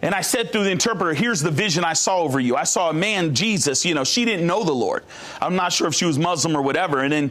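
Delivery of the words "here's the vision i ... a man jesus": ordinary talk, nothing marked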